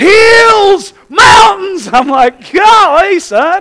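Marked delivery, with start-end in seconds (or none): 0.0-1.9 put-on thrilled child's shriek, high, Hills drawn out. Parent retelling their son's outburst, imitating excited screaming. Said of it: "he's screaming".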